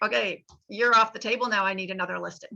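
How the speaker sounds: jokey, playful voice. Retelling what he jokingly says after selling someone's house, imitating a joking tone. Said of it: "his little humorous thing is like".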